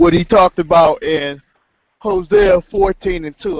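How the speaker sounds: words stretched through a yawn. Recalling which scripture another speaker discussed, yawning while talking. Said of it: "I'm yawning at the same time".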